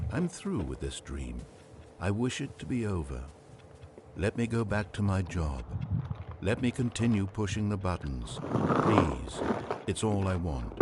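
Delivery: ordinary delivery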